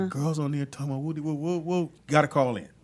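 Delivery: ordinary talk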